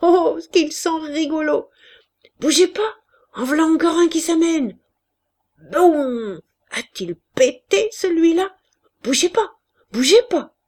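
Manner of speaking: loud, delighted, gleeful cries. Narrator reads a ten-year-old boy watching a battle: exclaiming with glee. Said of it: "il s'exclamait d'allégresse à chaque détonation".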